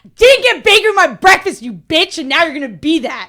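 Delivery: very loud, high-pitched, charging scream. During a role-playing game, the player charges up the cliff, screaming in character. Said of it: "I'm screaming".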